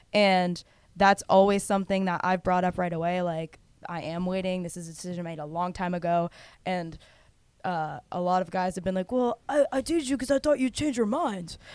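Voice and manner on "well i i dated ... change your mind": high, put-on dude-bro voice. Retelling what guys she dated told her: bro voice. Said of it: "That was a good bro voice".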